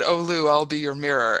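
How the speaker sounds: normal talking voice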